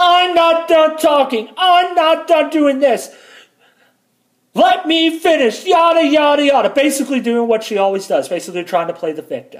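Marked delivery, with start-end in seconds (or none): 0.0-6.7 mock shrieking, unhinged little voice, high and slow. Retelling how she screamed during an argument, mimicking her psychotic screaming. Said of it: "screaming in her little psychotic voice".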